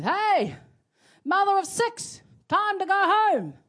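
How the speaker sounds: very high, loud voice. Retelling a man at a party calling to his wife, retelling a raised-voice call. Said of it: "he raises his voice and goes".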